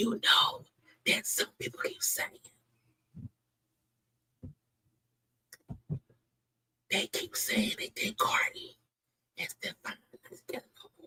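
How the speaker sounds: very soft, hushed gossiping whisper. Speaker passes on to viewers something people keep saying; whispering. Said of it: "Now I'm whispering that".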